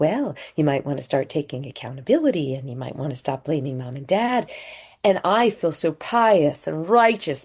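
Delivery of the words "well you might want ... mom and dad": kindest, sweetest condescending tone. Speaker recalling talking down to a suffering alcoholic, retelling a sweet condescending voice. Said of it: "in the kindest and sweetest and most condescending voice imaginable".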